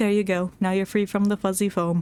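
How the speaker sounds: level, deadpan, flat monotone drone. Mimicking someone's line back to them, in a flat monotone. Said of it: "You said that in such a monotone voice. Like".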